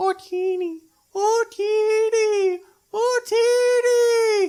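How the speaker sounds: very high, squeaky creature call, each word stretched. A host answering a fan question does a Jawa mating call impression. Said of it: "as far as an impression of their mating call".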